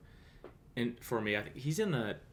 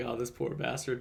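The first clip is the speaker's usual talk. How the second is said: plain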